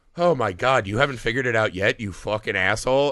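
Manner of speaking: put-on contemptuous, sneering, dripping, snide tone. Retelling a movie scene, imitating Frankenstein's dripping snideness. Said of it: "says every line with such a dripping cuntiness".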